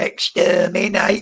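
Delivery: loud, machine-like robotic voice, called out. Speaker compares someone to the old Daleks and tries the voice again: Dalek voice. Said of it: "that voice works with my throat".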